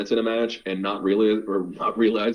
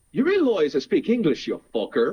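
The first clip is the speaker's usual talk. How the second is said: put-on Irish accent, pitched up; 8 semitones higher than usual. Retelling a bartender's reply after being ordered from in japanese, in an irish accent. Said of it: "he speaks English with an Irish accent".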